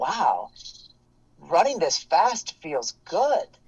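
slow, sing-song, upbeat, enthusiastic voice. Acting out a runner's inner voice during a race: acting out an enthusiastic inner voice. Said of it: "that enthusiastic voice of positivity".

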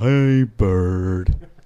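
very loud, belted, final word held long. Doing a Sesame Street bit as an impression: Dave Chappelle impression. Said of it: "doing the, uh, Dave Chappelle impressions".

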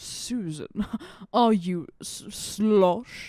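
very slow, drawn-out, fake-sounding British accent. Joking about the slang lines they give Ian, imitating Ian's British accent. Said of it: "sounds like he's a fake British person".

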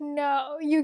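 normal talking voice

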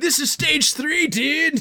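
bro, surfer-dude voice. Role-playing a chef in a surf shop, greeting a friend: bro voice. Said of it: "This is the bro stage".

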